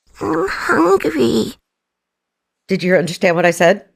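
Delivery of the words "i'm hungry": high, creaky, rough-edged cute little voice. Doing a voice for the hosts after they ask: Labubu voice. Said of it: "it's my Labubu voice".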